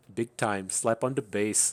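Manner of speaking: put-on Jamaican accent. Retelling a man's bass-slapping bit: bad Jamaican accent. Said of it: "he's trying to do his Jamaican accent".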